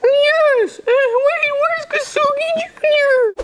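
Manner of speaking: very high squeaky toy voice.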